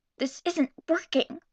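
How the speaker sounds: harsh hiss through clenched, gritted teeth. Reading a character's line to someone hiding behind a tree: harsh whisper. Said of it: "she whispered harshly".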